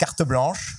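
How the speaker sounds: carte blanche pronounced the French way. Explaining the freedom the hotel gives artists, in a French accent. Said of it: "so I'm gonna do it with a French accent".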